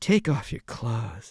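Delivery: very low, put-on woman's voice. Retelling a ghost story, quoting the voice he hears: imitating a woman's voice. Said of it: "he hears this woman's voice".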